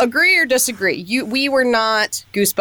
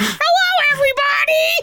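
very high-pitched put-on character voice. Demonstrating a podcaster voicing his other character, high-pitched voice. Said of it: "you with a high pitched voice being like".

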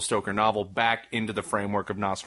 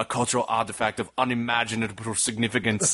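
put-on German filmmaker voice. Retelling an online joke of Werner Herzog reading Curious George: Werner Herzog impression. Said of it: "somebody doing an impression of Werner Herzog reading Curious George".

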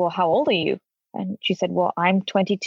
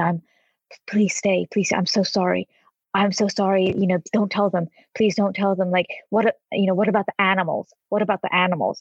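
put-on pleading whisper. Retelling a woman's plea under her breath: imitating a pleading whisper. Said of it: "under her breath, she said".

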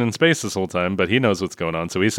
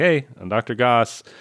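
normal talking voice

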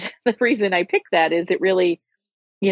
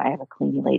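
hushed voice, much lower pitch; 4 semitones lower, 4 dB quieter than usual. Showing how people used to say this a few years ago, hushed tone. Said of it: "you would say it in a hushed tone".

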